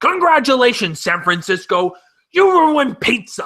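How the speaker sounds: animated, high comedian voice, thrown out.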